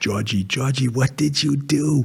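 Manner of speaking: put-on slow, heavy Portuguese accent, laid on thick. Retelling a grandfather's reaction after graduation, in a thick Portuguese accent. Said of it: "He had a really thick Portuguese accent".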